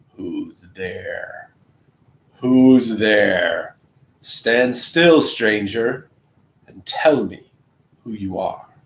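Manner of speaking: low, growling creature voice. A narrator reads a huge creature challenging a stranger: growling voice. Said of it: "said in a growling voice".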